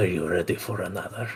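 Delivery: soft, fast, whispered taunt. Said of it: "I'm gonna whisper in his ears".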